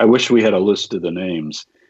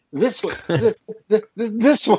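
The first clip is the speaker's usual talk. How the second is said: put-on excited stutter, much higher pitched; 12 semitones higher than usual. Explaining a Bible verse, acting out the man's reaction: excited stuttering. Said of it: "He's so excited".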